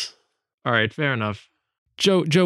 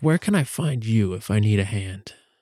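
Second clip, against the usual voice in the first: speaking in a whisper. Leaning in before someone leaves to ask where to find him: whispering. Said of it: "like, whisper a little bit".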